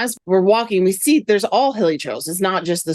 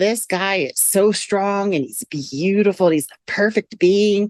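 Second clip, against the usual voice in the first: plain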